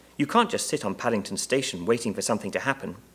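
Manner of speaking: ordinary delivery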